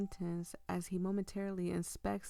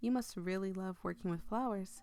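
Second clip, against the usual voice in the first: ordinary delivery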